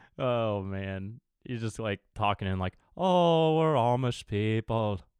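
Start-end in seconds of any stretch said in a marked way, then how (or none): 3.0-5.0 slow, fake, put-on Irish accent. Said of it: "we sound like we're Irish".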